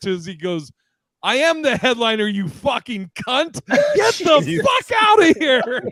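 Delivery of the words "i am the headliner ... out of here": put-on sudden, enraged, very high outburst, climbing. Retelling Doug answering the heckler after sobering up: imitating a sudden angry snap. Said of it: "Doug sobered up immediately".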